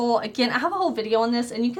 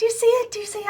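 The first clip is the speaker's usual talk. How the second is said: overexcited rambling, higher pitch; 11 semitones higher than usual. Showing a rainbow highlighter to viewers, excited babbling. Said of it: "I'm sorry, I got so excited".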